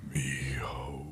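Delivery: drawn-out whisper. Kneeling as a son's coffin is lowered: longer whisper. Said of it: "a little longer on the whisper".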